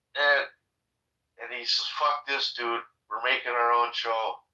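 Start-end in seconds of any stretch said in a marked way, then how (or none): none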